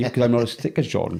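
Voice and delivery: normal talking voice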